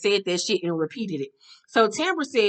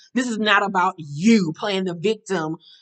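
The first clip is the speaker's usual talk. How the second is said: ordinary talk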